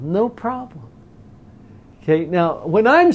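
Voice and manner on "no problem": said lightly, pitched up, with a little lilt. Demonstrating a reply with a little lilt and a smile: light, lilting, smiling. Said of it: "say it with kind of a lightness to your voice, a little lilt to your voice".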